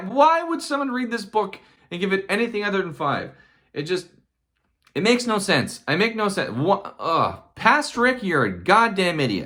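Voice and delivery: exasperated, riled-up, worked-up, high-pitched rant. Scolding their past self for giving a book four stars, worked up. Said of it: "As you can tell from my tone of voice, I'm a little worked up".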